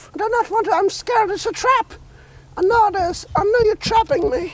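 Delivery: squeaky, very high little pet voice. Voicing the animal Peanut, who does not want to come: voicing Peanut the animal. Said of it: "And I'm Peanut".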